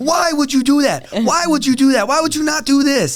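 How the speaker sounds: intense, very high-pitched, scolding scream. Describing a grappling instructor during warm-ups, imitating Diego screaming. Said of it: "he's like screaming at me like".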